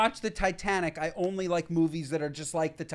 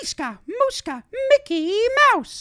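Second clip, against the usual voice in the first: belted way up high, with long stretched-out sounds; 10 dB louder than usual. Doing a requested impression for the others: Mickey Mouse voice. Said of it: "let's hear Mickey".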